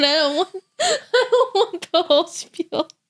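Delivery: talking through laughter. Answering another speaker who asks why they laugh: laughing while talking. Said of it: "I don't know why I'm laughing".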